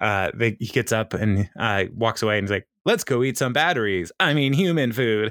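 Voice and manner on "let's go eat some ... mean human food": put-on robotic voice, higher. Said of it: "Ben starts acting all robotic".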